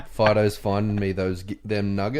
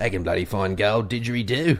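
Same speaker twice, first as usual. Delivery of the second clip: put-on broad Australian accent, exaggerated. Chatting with a co-host, tossing back a reply in an exaggerated Australian accent. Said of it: "You even do an accent for your accent".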